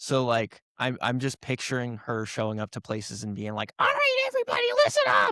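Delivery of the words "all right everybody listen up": very high, shrill, bossy call. Picturing a ghost showing up and bossing people around: imitating a shrill bossy voice. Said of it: "a really shrill voice".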